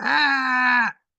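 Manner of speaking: put-on high, loud scream.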